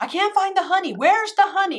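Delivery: high, screamed call. Retelling someone searching the pantry for honey: imitating someone screaming. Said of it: "he's screaming from the pantry".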